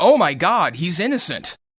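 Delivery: loud, sudden blurted exclamation.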